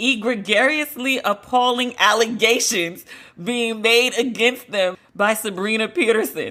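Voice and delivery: giggling, speaking through laughter. Reading a quoted publicist statement aloud, laughing while reading. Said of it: "I'm laughing".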